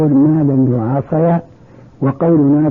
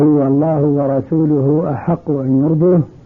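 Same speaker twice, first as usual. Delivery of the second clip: ordinary delivery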